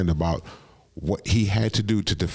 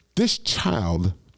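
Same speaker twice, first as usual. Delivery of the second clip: usual speaking voice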